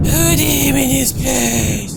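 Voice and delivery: high, slow, drawn-out evil villain voice.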